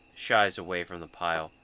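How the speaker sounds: plain reading voice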